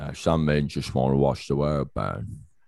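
put-on older English butler voice. Quoting the butler Alfred's line about the world burning: Michael Caine voice.

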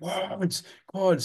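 mock, very high, urgent screaming. Recounting how someone kept screaming at them during play, retelling someone screaming. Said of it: "screaming at me".

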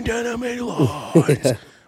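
high, excited, fired-up, all-out yell. Acting out a screamed message written in all caps: imitating Nick Foles screaming. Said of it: "he screamed behind em-, enemy lines".

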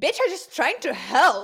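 mock, very loud, weirdly defensive delivery. Retelling an episode scene, imitating Gabrielle being weirdly defensive. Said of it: "weirdly defensive about it".

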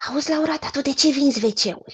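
put-on whisper. Retelling a former colleague's question to the speaker, imitating a whispered question. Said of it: "m-a întrebat așa în șoaptă".

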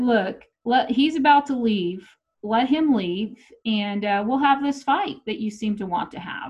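ordinary talk, nothing marked

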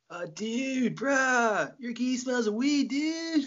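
very high, slow hippie drawl, "bruh" drawn out. Imagining what people in the other speaker's hippie town would say: imitating a hippie. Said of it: "I'd be really welcome in your hippie town. They'd be like".

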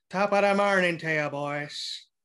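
put-on Irish accent, leprechaun character voice. Greeting the boys at the start as a joke: irish leprechaun voice. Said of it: "sound like an Irish leprechaun".

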